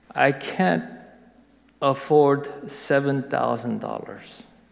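normal talking voice

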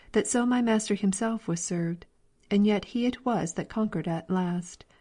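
ordinary delivery

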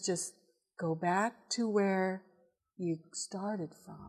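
hushed, very calm, soft, soothing voice. Preaching, retelling what he says to someone, in a very calm voice. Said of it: "Very calm voice".

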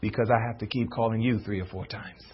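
sweet, soft, low, still, gentle small voice. Speaker voicing God's answer to a parent calling the children downstairs, sweet, still, small voice. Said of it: "in his sweet, still, small voice".

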